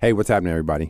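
on-air radio disc jockey style voice. Introduced on a style show, greeting everybody, radio DJ voice. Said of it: "I like that [name] sounds like a DJ".

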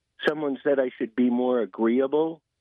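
usual speaking voice

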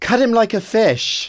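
put-on terrible, high-pitched English accent. Retelling own line shouted during a rehearsal: terrible English accent. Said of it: "in that terrible, terrible English accent".

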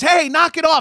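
shrill, very high, loud yelled scream. Describing a scene, quoting an older woman who comes in, retelling a scream. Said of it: "comes in and screams".

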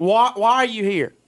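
put-on stern tone. Retelling how a woman confronted him at her pool gate, mock-stern voice. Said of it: "This is a stern".

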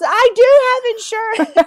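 very high, very slow shout, stretching do. Retelling a girl running away from him: imitating someone shouting. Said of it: "she just shouts".

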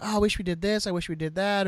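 ordinary talk

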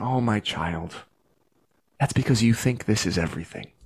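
put-on tender soothing tone. Telling what God basically says to a struggling child, imitating God's loving, calm voice. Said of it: "a loving, calm voice from God".

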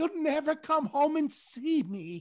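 very high-pitched, pleading mother voice. Imitating a mom scolding over eating at Olive Garden: imitating Sebastian's mom. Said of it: "she'll be like".

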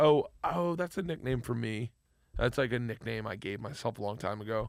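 normal talking voice

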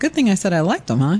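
plain

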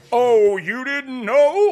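very high, very loud megaphone-like blare. Podcast host announces the show's name with hands in a megaphone sign: megaphone voice. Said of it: "It sounds like a megaphone".

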